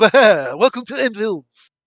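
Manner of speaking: loud, slow, drawn-out cartoon vampire voice. Game narrator voicing a vampire sinking his fangs into a player, vampire voice. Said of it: "they all talk like this".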